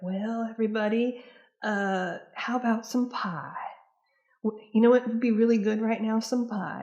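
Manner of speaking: put-on grandmotherly voice, high. Speaker quotes a woman who offered pie whenever there was an argument: imitating her voice. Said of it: "that's how she sounds, like her voice".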